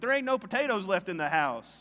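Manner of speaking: put-on Southern accent, Tennessee style. Retelling something said at home after a trip to tennessee: imitating own southern speech. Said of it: "inject their Southernness back into me".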